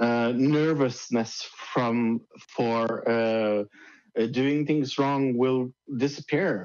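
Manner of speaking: ordinary talk, nothing marked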